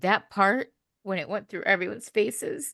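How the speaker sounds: near crying, barely holding it together. Recalling a scene just watched before recording, on the verge of tears. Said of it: "I can't even finish my thought because I'm going to cry again".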